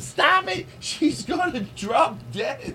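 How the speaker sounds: high, laughing yell.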